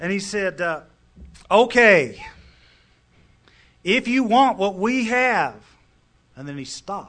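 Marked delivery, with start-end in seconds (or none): 1.5-5.6 slow, loud Texas drawl, words stretched out. Retelling what a man said at a meeting in a log cabin, Texas accent. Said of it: "He sounded like he's from Texas".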